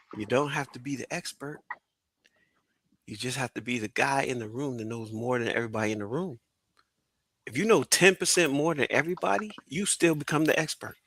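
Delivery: very quiet, hushed, confiding half-whisper. Speaker asks the audience to lean in before sharing a tip: half-whispering. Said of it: "I'm gonna whisper it".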